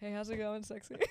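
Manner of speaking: put-on deep voice. Urged to bring out that deep voice, trying a put-on deep voice. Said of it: "Bring out that deep voice".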